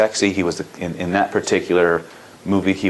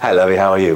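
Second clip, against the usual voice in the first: put-on pirate voice, louder; 4 dB louder than usual. Retelling greeting women while acting as Captain Jack Sparrow: Captain Jack Sparrow voice. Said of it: "I became Captain Jack Sparrow".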